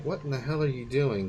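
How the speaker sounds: ordinary talk, nothing marked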